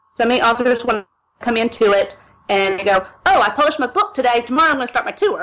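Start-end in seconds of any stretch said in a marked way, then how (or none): 3.3-5.5 facetious mocking tone, much faster. Speaker mocks authors who rush into blog tours, facetious mock quote of authors. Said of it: "I'm being facetious there".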